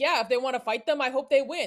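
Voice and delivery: offhand remark, rattled off quickly. Speaker imagines a public figure shrugging off a question, in an offhand Trump voice. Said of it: "I can imagine that in a Trump voice".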